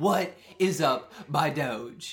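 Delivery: very loud, very slow, bellowed cartoon character voice. Voicing a character's line in a game, using a Homestar Runner voice. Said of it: "this is my best Homestar Runner voice".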